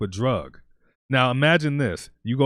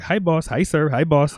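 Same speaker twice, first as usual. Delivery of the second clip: put-on Filipino accent; 4 semitones higher, 3 dB louder than usual. Speaker recalls staff in the Philippines greeting a visiting manager, imitating a Filipino accent. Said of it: "they they have this accent".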